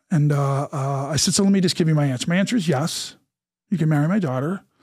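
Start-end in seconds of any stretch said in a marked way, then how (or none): none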